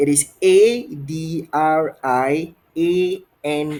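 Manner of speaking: slow, letter-by-letter spelling. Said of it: "let me help you".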